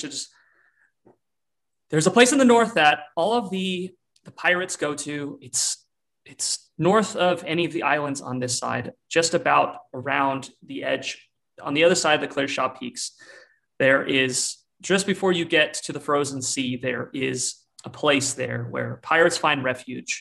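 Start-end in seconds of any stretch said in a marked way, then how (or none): none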